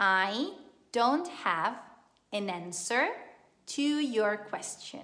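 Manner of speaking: slow, chunked delivery with pauses between parts.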